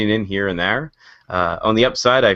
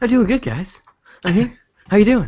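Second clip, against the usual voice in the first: very high, pitched way up put-on celebrity voice; 11 semitones higher than usual. Answering a greeting of how they're doing: Mark Wahlberg impression. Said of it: "It's Mark Wahlberg impression".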